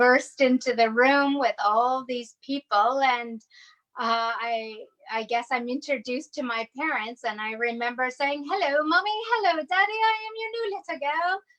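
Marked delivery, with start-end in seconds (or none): 8.5-11.4 very high, bad put-on British accent. Retelling first meeting new parents as a child, greeting them in a bad British accent. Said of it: "I do a very bad, poor British accent".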